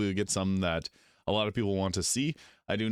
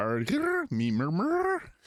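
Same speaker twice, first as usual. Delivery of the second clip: very high, swooping, funny talking-cat voice; 11 semitones higher than usual. Imitating a game cat that asks you something: put-on talking cat voice. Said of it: "That's my best impression of it".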